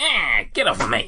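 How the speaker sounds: whiny little goblin voice, high and loud. Game master voicing a grappled goblin in a tabletop game: whiny goblin voice. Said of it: "Whiny voiced little prick as well".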